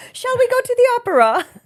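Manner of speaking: high, loud faux British accent. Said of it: "He doesn't have a faux British accent".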